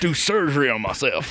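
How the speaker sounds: high-pitched mock American accent.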